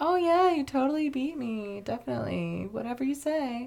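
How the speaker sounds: put-on smug, self-satisfied, humouring tone. Retelling Dom's reaction to Brian's claimed win: imitating Dom, smug and self-satisfied. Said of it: "self-satisfied smirk".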